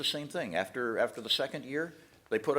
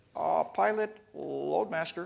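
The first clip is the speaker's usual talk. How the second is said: small, timid, timorous little voice; 3 semitones higher than usual. Retelling a new loadmaster calling the pilot over the headset: imitating a timorous little voice. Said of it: "this timorous little voice".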